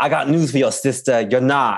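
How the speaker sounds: strong, exaggerated Boston accent. Quoting a line from a fight, in Trish's Boston accent. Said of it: "Trish's Boston accent".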